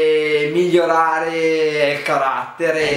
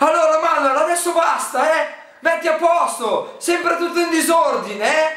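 mock-angry put-on voice pitched much higher; 12 semitones higher than usual. Answering a couples quiz prompt to imitate his partner: imitating Alessia getting angry. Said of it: "Imita Alessia quando si arrabbia".

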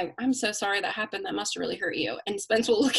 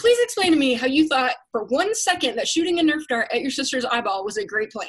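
mad, mocking, swooping, sarcastic scolding; 4 semitones higher, 3 dB louder than usual. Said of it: "because I'm mad".

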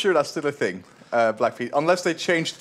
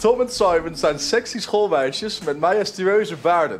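ordinary talk

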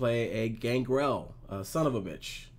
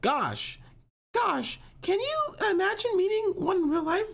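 awful put-on teenage girl voice, much higher; 4 dB louder than usual. Reading out a quote from a 15-year-old girl, in a bad teen girl voice. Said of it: "That's my girl voice. It's awful".

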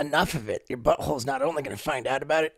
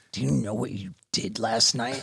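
mock voice full of utter, accusing disgust; 4 semitones lower than usual. Retelling what a friend said the next morning: imitating a disgusted friend. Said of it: "he looks at me just with disgust".

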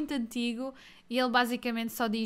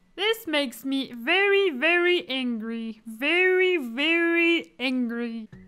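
raised voice, every "very" stretched out; 3 semitones higher, 6 dB louder than usual. Ending a run of cartoon impressions for viewers: Marvin the Martian voice. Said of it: "vou fazer uma frase do Marvin the Martian".

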